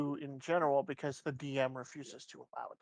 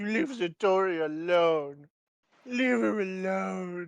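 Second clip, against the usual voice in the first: loud, drawn-out, sad, upset scream; 4 semitones higher, 6 dB louder than usual. Speaker announces screaming at something in a sad voice: screamed in a sad voice. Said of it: "I'm gonna scream at it in a sad voice".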